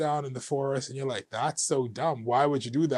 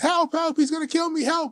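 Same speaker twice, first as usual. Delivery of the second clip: shrill, very high, loud panicked scream; 5 dB louder than usual. Retelling running into traffic and banging on car windows: retelling a scream for help. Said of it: "I'm screaming".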